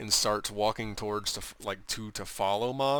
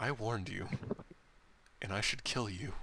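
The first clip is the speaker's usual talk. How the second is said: quiet, hushed voice; 7 dB quieter than usual. Storyteller relaying what a character says in reply, in a hushed tone. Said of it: "in a hushed tone says".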